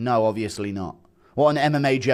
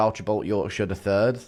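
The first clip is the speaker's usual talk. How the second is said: ordinary delivery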